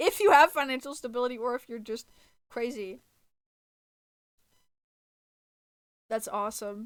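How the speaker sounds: sincere tone that accidentally sounds sarcastic. Sincerely congratulating listeners, though it comes out sounding sarcastic. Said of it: "that still sounds sarcastic".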